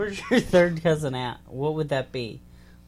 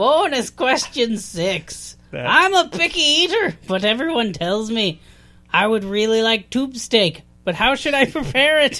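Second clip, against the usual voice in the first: loud, high, shoddy put-on Irish accent; 8 semitones higher, 7 dB louder than usual. Reading out bonus question six, in a bad Irish accent. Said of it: "I could do a shitty Irish".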